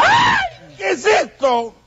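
furious, angry, yelling outburst.

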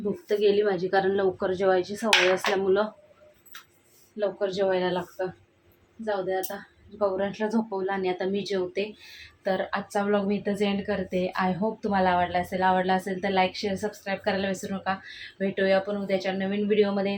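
soft, quiet, hushed voice.

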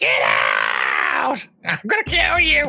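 screeching, rough, swooping creature scream. Voicing the voice from the cave as the listeners stumble in, screaming creature voice. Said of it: "the voice screaming out says".

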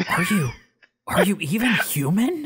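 hushed whisper. Voicing an enemy pilot heard over the radio: whispering over the radio. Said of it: "You just hear him whispering in the radio".

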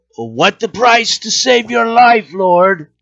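shrill, very high, loud shout. Spotting the lord down on the ship, yelling out to him. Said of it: "I will yell out".

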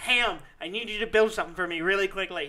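ordinary talk, nothing marked

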